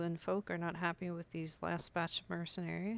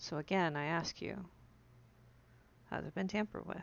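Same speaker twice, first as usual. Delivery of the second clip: lowered, low voice. In a roleplay, a character leans in to ask about a drink: lowered voice. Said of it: "She'll lower her voice".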